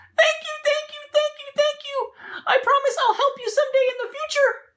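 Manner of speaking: tiny squeaking mouse voice, very high. Storyteller telling the lion and mouse fable, voicing the little mouse. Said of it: "the little mouse says".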